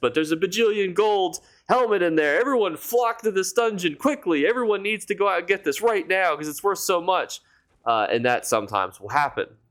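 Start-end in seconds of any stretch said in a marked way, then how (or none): 0.1-7.4 very high, hyped clickbait-video voice. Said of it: "I don't know why I made my voice sound like this".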